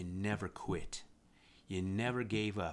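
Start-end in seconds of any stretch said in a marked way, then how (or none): none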